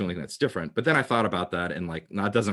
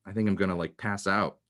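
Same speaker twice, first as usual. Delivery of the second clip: normal talking voice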